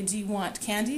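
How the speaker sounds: ordinary talk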